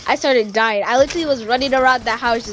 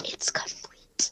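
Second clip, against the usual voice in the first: very quiet whisper under the breath. Retelling someone's last words, in a retold whisper to himself. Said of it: "he just whispers to himself".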